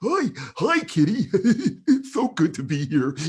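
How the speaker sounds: squealing and booming, very high, very loud character voice. Speaker demonstrates a voice they came up with: invented character voice. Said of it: "I came up with this voice".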